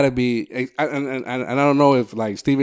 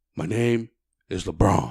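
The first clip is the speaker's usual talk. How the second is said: deep mocking voice, much quieter; 4 semitones lower, 4 dB quieter than usual. Showing how someone else imitates LeBron, the speaker uses a deep mock LeBron voice. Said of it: "the deep one".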